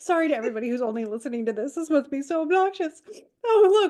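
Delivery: crying with laughter, tearful. Apologizing to listeners mid-conversation, crying with laughter. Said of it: "now I'm crying for a different reason".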